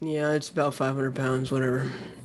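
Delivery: acted flat, unenthused deadpan. Describing anglers posing with giant fish, speaker voices them: imitating a deadpan angler. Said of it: "it's just a deadpan".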